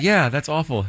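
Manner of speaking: play-acted bright, cheerful, upbeat tone. Retelling how a friend reacted to bad health news: imitating Emily, cheerful tone mismatching words. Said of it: "The tone doesn't match the words".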